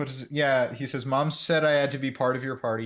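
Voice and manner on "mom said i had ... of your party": ordinary talk, nothing marked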